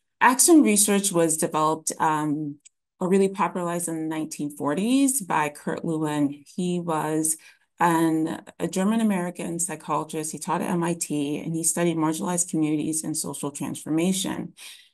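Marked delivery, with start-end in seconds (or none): 11.4-14.5 rushed, too-fast delivery. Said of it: "Sorry, I'm speaking too quickly".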